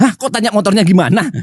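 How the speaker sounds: acted angry, incredulous outburst, high and indignant. Retelling the reaction to dad's first question after the accident, retelling an angry reaction. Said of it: "Aku emosi".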